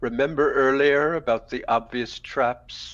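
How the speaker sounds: very deep, very low, eerie, otherworldly voice. Voicing a glowing-eyed companion speaking in a voice not his own: strange voice not his own, deeper. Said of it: "you just hear this voice that's not his that says".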